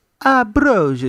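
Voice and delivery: ambrosia said gently, slightly high. Proposing ambrosia as a nicer word than fasting, soft voice on ambrosia. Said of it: "You say it with a soft tongue, soft voice".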